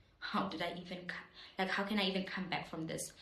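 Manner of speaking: ordinary delivery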